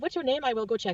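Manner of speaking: put-on French Canadian accent. Retelling what a hospital volunteer said: imitating a French Canadian accent. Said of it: "I'm just gonna try to imitate it".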